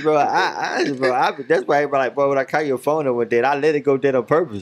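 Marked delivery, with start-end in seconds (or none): none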